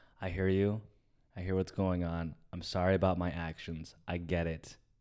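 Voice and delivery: acted-out, mock-calm tone. As the oldest, retelling how they answer him in an argument, acting out a calm reply. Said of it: "you have to just calm down".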